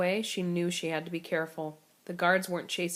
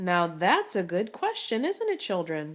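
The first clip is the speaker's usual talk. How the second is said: sticky, sugary, syrupy sweet tone. Making fun of a girl's question, a woman addresses the children in a sticky sweet tone. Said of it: "said in a sticky sweet tone".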